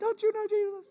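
put-on high, soft middle-school-girl voice. Retelling the Bible story, the speaker voices a middle school girl questioning Peter: middle school girl voice. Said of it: "that's my middle school girl voice".

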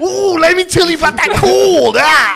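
very high, loud hype voice. Pitching cold in a wrestler bit: Randy Savage voice. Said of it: "Can you imagine Randy Savage selling cryo?".

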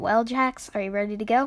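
ordinary delivery, nothing marked

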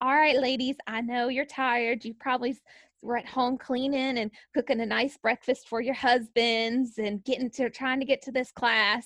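put-on prim, proper Southern lady voice. Retelling what a class leader told the ladies, prim, proper Southern lady voice. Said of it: "proper Southern lady is there as the leader".

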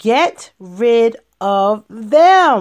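slow, loud, dramatic pronouncement. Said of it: "Here it comes".

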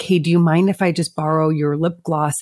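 normal talking voice

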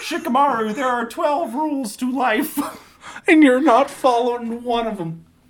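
very high-pitched, frog-like puppet voice. Retelling a scene where Shikamaru's mom lectures him, in a high-pitched Kermit the Frog voice. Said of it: "a high-pitched Kermit the Frog".

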